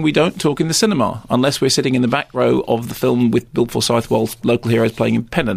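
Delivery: ordinary delivery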